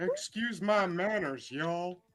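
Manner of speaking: slow, drawn-out cartoon character voice. Apologizing to the group after smoking weed: sounding like a cartoon character. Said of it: "He sounded like that guy off the cartoon".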